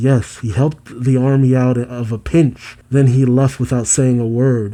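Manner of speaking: normal talking voice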